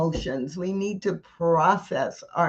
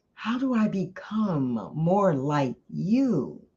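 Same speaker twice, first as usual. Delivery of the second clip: intimate, secretive, confiding tone. Narrator reads the seed asking the flower a question, in a hushed voice. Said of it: "asked in a hushed voice".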